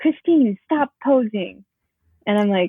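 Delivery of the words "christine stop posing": put-on stern, scolding yelling voice. Retelling how the choreographer reacted at rehearsal: imitating someone yelling. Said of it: "she immediately starts yelling at me".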